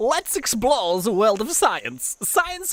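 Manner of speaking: terrible fake Russian accent. Playing a park game, voicing the russian dinosaur's line, terrible russian dinosaur voice. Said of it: "Such a terrible voice".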